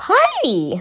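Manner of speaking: very high-pitched put-on cartoon voice. Trying out a character voice for listeners, Pinkie Pie voice. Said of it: "I can legit do a high-pitched Pinkie Pie voice right now".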